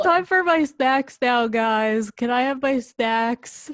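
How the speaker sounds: dumb, dim, dopey hound dog voice. Voicing a dog talking to the group, in Ravioli's dumb hound voice. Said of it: "Ravioli has more of like a dumb hound voice".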